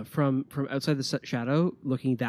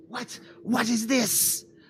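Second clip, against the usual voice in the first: very high, startled, shocked rat-creature voice; 10 semitones higher than usual. Voicing a rat warrior suddenly engulfed in darkness: shocked rat warrior voice. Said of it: "rather shocked at the, at the darkness".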